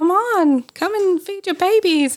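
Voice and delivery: very high, coaxing pigeon-like coo. Retelling how the pigeon urged the mother rabbit: imitating a cooing pigeon. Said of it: "cooing at her, like".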